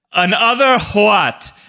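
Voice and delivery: H in what sounded clearly and hard. Showing how an actor makes the word sound so foreign, in a Michael Emerson impression, enunciating the H. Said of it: "really enunciates the H in other what".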